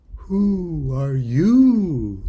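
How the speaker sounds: drowsy, lazy, drawn-out sleepy drawl on "you". Narrator reading the Caterpillar addressing her, languid, sleepy voice. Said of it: "addressed her in a languid, sleepy voice".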